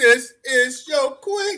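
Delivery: very high, slow, stretched-out royal presentation proclamation. Quoting a movie line about a queen: Coming to America impression. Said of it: "I say it like, uh, uh, Coming from America".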